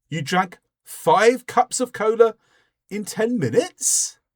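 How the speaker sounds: surprised, incredulous rising pitch on minutes. Showing a question used to express surprise, surprised rising question ending. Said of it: "So I've raised the tone at the end".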